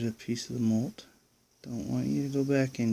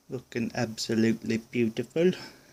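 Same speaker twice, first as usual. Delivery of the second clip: bad, put-on English accent. Looking in at him, quoting Spider-Man in a horrible English accent. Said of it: "excuse my horrible English accent".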